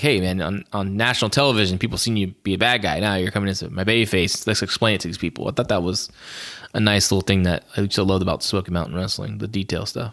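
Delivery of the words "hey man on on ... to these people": ordinary talk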